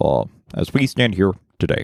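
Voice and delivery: slow, stately, statesmanlike speech-making delivery. Asked for a good Obama, trying the one Dana Carvey does: a Dana Carvey-style Obama impression. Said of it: "Dana Carvey's impression of Obama".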